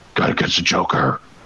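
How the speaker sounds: brooding, put-on heroic voice. Comparing video game stories, the speaker voices a line: Batman voice. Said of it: "that was a good Batman voice".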